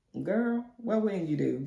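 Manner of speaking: words broken up by laughing throughout. Retelling a car outing with mom, the speaker acts out laughing while talking. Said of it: "I'm just looking at her laughing like".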